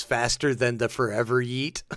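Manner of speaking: normal talking voice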